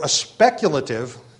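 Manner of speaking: speculative stressed with wide pitch swing.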